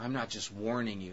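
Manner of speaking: normal talking voice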